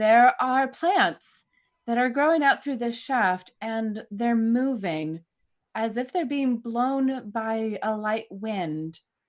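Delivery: very slow, deliberately spaced-out words. Replying in character over a radio link with an echo: speaking very slowly. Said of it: "Replying very slowly".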